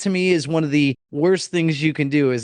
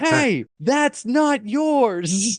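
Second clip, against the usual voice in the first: put-on stern, angry fatherly shout, pitched up; 8 semitones higher than usual. Speaker retelling yelling at a guy taking a package, in an angry dad voice. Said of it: "I immediately yell in my best angry dad voice".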